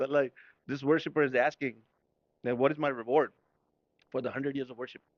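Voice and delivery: normal talking voice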